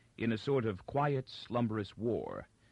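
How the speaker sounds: ordinary delivery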